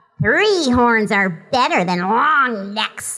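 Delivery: gruff, growly little cartoon dinosaur voice. Voice actor doing the character's voice when people ask, in a low growly character voice. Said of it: "she gets to kind of growl down here".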